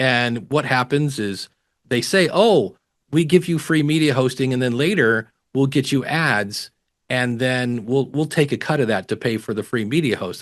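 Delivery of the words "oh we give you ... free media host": plain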